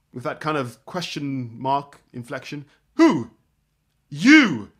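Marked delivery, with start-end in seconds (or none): 4.0-4.6 firm stress landing on the final "you". Speaker demonstrating the other person's reply, with stress on final 'you'. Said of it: "that re-emphasis on the final "you."".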